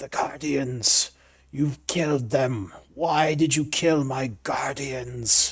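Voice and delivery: creature voice, irritated and annoyed. Voicing a creature whose guardians were killed: voicing an annoyed creature. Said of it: "It seems very annoyed".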